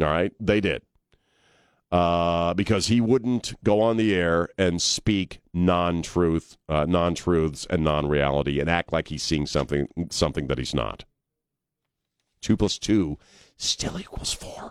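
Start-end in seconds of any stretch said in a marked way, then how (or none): 13.6-14.7 half-whispered, breathy delivery. Apologizing for whispering a line: Joe Biden-style whisper. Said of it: "didn't mean to get all Joe Biden-y on you there by whispering".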